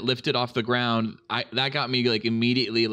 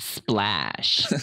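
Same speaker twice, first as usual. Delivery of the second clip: put-on camp voice on a single word; 4 semitones lower than usual.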